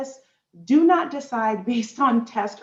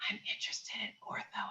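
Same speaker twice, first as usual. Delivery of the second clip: secretive, hushed whisper, barely voiced; 19 dB quieter than usual. Retelling what students said in the office: imitating a student whispering. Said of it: "students in my office that would whisper".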